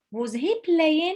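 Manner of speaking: rising lift at the end on playing. Lesson contrasting statement and question forms: rise on playing. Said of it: "so it goes up".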